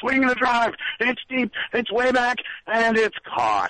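very high, drawn-out, swooping radio announcer voice. Retelling a Red Sox radio announcer's call: imitating a radio announcer's call. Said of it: "notorious for doing that kind of thing".

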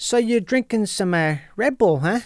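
put-on Chicago accent. Talking about regional accents, the speaker demonstrates the chicago accent. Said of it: "there's the Chicago accent".

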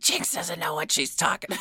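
put-on soft, quick old hag voice. Imagining someone in the witch community criticizing her description, in an old hag voice. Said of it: "I just gave her an old hag voice".

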